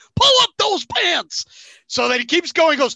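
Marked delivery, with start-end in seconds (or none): 0.2-1.5 excited, high live play-by-play sportscaster call. Re-creating the Super Bowl call of someone running on the field, do a Kevin Harlan impression. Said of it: "I'm going to do my best Kevin Harlan impression".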